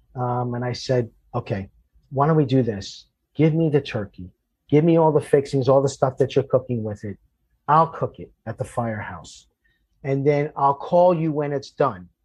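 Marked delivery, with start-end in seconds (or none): none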